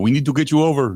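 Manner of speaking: put-on French accent, exaggerated and played up. Speaker retelling what the man from France said to him: put-on French accent. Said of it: "I don't know why I'm talking like this".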